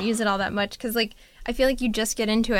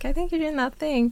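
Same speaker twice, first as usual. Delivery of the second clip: mock polite, kindly, gentle, pitched-up tone; 5 semitones higher than usual. Describing how Jeff reacts to someone driving fast: imitating Jeff saying it nicely. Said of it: "he'll just say it nicely".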